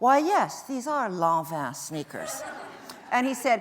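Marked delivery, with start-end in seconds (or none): 0.0-2.4 superior, haughty, put-on snooty voice. Retelling answering a man's question about sneakers, in a mock snobby voice. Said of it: "in my snobbiest voice".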